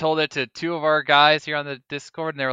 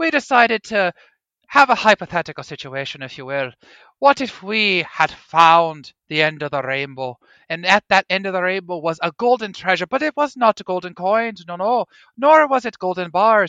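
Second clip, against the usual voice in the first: put-on Irish brogue; 4 semitones higher, 3 dB louder than usual. Speaker poses a hypothetical situation, in a put-on irish accent. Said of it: "in this perfectly accurate Irish accent".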